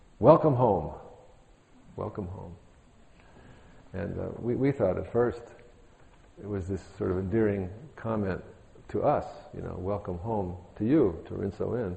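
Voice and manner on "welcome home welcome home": loud, carrying, projected voice. Retelling what a woman declared after praying before the Buddha, loud voice. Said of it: "said in a loud voice".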